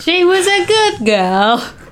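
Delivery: very high, overdone put-on British accent. Trying out accents with others, switching to a british one: british accent. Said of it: "I use my British accent".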